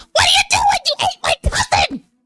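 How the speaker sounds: tiny creature voice, very high and swooping. Voicing a tiny potato-shaped creature rising out of the soup: tiny potato creature voice. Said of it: "And he goes".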